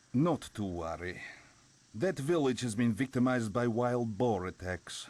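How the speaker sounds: bad, terrible Russian accent. Voicing a game character reassuring about wild boar attacks: bad Russian accent. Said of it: "The worst fucking Russian accents".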